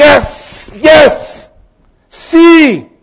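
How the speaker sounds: very high, loud, jubilant shout.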